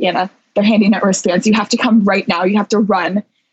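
play-acted pressing, urgent tone. Retelling a phone call urging the speaker to come right now, imitating Haley's urgent tone. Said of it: "she's got like this urgent tone in her voice".

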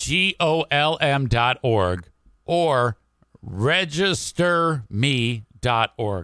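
very slow, oddly drawn-out, weird delivery. Giving the organ donor registry web addresses, in a slow, weird delivery. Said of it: "i say that so slow and weird".

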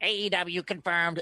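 mocking, nerdy internet troll voice. Recalling the podcast producer's running joke, in a nerdy internet troll voice. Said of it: "in that like nerdy internet troll voice".

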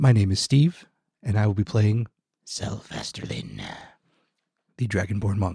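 swooping public-radio news-presenter voice. Player introducing themself and their character to the table, NPR podcast voice. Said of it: "I'll go back to the general podcast NPR voice".

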